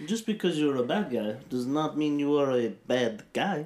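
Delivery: Russian wrestler character voice. Discussing a movie's villain who wants to be the hero, doing a Zangief impression. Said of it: "That was a pretty good impression".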